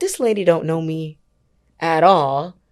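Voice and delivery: normal talking voice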